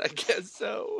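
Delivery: slow, high-pitched fake sobbing.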